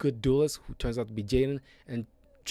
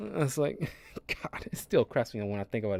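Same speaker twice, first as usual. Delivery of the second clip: ordinary talk, nothing marked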